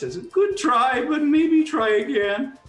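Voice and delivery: put-on squeaky voice. Retelling what the man raking back the money says each time, squeaky voice. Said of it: "with his squeaky voice".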